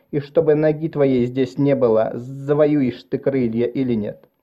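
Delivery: ordinary delivery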